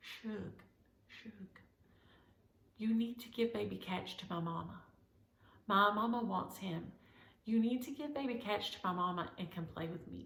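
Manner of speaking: hushed half-whisper, close in the ear. Retelling what Aria half-whispered in her ear: imitating Aria half-whispering. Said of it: "she's whispering in my ear".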